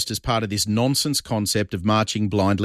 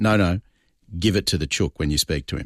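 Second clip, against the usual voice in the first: put-on stern voice, lower; 4 semitones lower than usual. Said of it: "he looked at me and he went".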